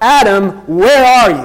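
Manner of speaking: booming, thunderous bellowing voice. Retelling the garden story, voicing the call to the first man in a thunderous voice of God. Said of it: "the thunderous voice of God starts bellowing out".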